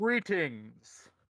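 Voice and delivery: big, booming, high-pitched voice. A voice in a dream catches Tia off guard, greeting her in Gabe's booming voice. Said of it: "in a booming voice".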